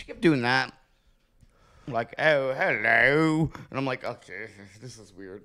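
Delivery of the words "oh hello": bad fake English accent, drawn-out hello. Describing someone who keeps putting on an accent; worst fake English accent. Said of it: "it's like the worst fake English accent".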